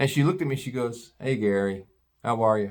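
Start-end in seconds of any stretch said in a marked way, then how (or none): 1.2-2.7 mock low-key, deflated, calm, subdued tone. Recalling a woman's greeting at a race, imitating a calm, downcast tone. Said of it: "Real kind of calm, just really kind of down and out".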